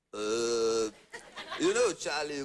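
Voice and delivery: very low, very slow drawl. Describing how he talks in interviews: Stallone impression. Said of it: "the old Stallone impression".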